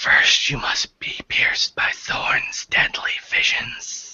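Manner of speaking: whispered, breathy, hushed, practically inaudible. A game master voicing a character speaking to a player right beside him, whispering. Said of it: "so he actually whispered".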